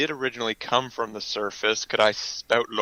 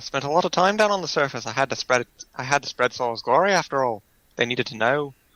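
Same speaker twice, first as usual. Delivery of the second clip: put-on Scouse Liverpool accent throughout; 2 semitones higher than usual. Speaking in character during a story scene, in a Liverpool accent. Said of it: "Liverpool accent".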